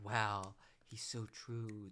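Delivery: put-on, very slow, dazed, vibing awe. Mocking people on the show who agree in awe: mocking awestruck agreement. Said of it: "vibing off of it".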